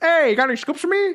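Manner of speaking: put-on very high-pitched New York accent. Describing a news reporter character at the theater, imitating her with a New York accent. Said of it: "they gave that lady a New York accent".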